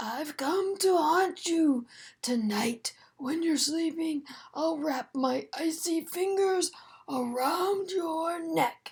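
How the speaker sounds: eerie, scratchy ghost voice. Narrator reading Bean pretending to be a ghost to scare Ivy, scratchy spooky ghost voice. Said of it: "Bean made her voice scratchy and spooky".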